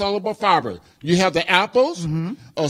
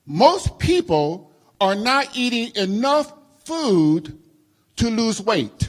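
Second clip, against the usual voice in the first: very slow, deliberate, much slower pace. Repeating a saying that shocked someone before, the speaker says it real slow. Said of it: "I'm going to say it real slow".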